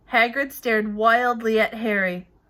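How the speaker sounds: plain reading voice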